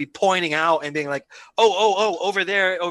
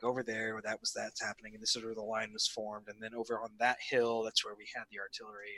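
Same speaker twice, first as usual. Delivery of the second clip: faint, very quiet half-whisper; 7 semitones lower, 16 dB quieter than usual. Playing a character quietly remembering the battlefield: half-whispering in character. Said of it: "sort of in a whisper".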